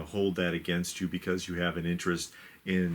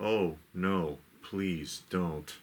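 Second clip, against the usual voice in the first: drawn-out, sarcastic, feigned concerned tone. Retelling a film scene where the girl nears danger: imitating Gene Wilder's sarcastic fake concern. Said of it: "he sarcastically acting like he cares".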